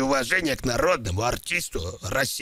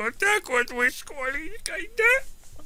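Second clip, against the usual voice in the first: pretend hurt, mock-sad, higher-pitched voice. Speaking to the others about Kolya: mock-sad. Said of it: "Не плачьте, молодой человек".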